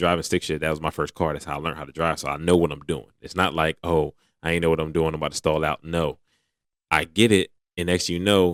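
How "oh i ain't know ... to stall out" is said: normal talking voice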